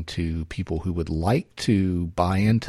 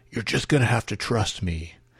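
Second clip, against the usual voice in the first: heavily exaggerated husky voice; 4 semitones higher than usual. Retelling a TV hero's tense phone call: exaggerated husky Jack Bauer voice. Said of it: "in this kind of exaggerated husky voice".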